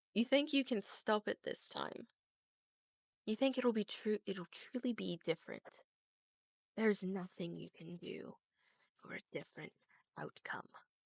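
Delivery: slow, smirking monster voice. Voicing a smirking creature speaking to the party: smirking creature voice. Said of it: "the creature speaks".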